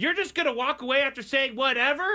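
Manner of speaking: play-acted, high-pitched, loud screaming. Retelling an argument with a stranger: imitating someone screaming. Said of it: "She's screaming at me as I'm trying to walk away".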